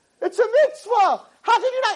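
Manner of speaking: play-acted screaming outburst, pitched very high. Retelling a heated exchange with a rabbi, retelling a scream. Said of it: "she starts screaming".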